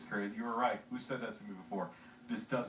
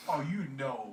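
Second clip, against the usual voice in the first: usual speaking voice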